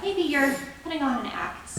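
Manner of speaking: ordinary delivery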